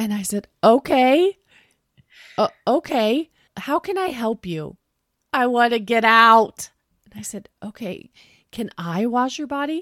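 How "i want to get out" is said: loud, sobbing, crying out through sobs. Speaker retells what she said while he tried washing her, imitating someone sobbing. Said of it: "Just sobbing".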